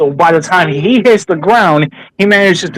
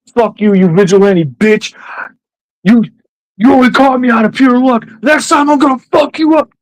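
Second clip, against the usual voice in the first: high, loud screaming with angry shouting; 6 semitones higher than usual. Retelling how a captured criminal reacted: imitating someone screaming. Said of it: "And Powell starts screaming".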